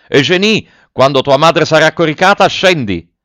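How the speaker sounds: high, loud, shouted, yelled out. Grandet climbs a few steps and calls up to Eugénie; shouted. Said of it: "gridò".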